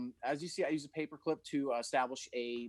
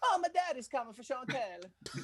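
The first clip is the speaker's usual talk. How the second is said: heavy put-on Italian accent, laid on thick; 10 semitones higher than usual. Acting out what the son says about school: imitating son's thick Italian accent. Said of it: "speak with such a thick Italian accent".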